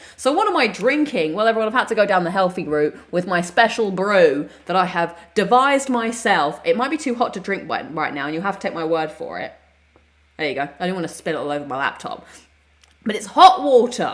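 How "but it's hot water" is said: overly loud, stretched-out voice. Telling viewers what is in the drink: said too loudly. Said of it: "I don't know why I said that so loud".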